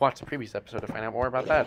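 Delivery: fast, rattled-off delivery. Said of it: "sorry for speaking so fast".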